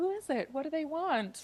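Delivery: play-acted very high, all-innocent-sounding voice. Retelling a movie scene where Pepa asks who's at the door: Pepa sounding all innocent. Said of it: "all innocent".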